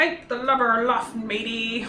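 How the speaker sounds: growling pirate captain voice.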